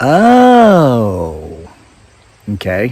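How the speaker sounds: oh drawn out, swooping, uninterested, dismissive inflection. Showing how to answer an overshare without caring: dismissive uninterested "oh". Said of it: "it's the inflection on the word "oh."".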